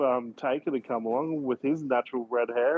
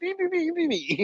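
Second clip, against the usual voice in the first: very high leprechaun voice. Explaining the stereotypical leprechaun they have in mind, stereotypical leprechaun voice. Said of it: "stereotypical leprechaun that's just like".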